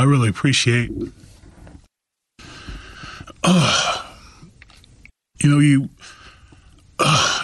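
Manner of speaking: emotional, voice catching. Thanking another speaker for kind words, getting emotional, choked up. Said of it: "it's hard not to get emotional".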